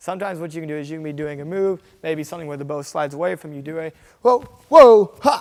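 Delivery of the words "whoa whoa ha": very loud, light-hearted, high playful yells. Demonstrating yells to make while doing a move: light, fun yells. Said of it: "a little bit more light, more fun sounding yells".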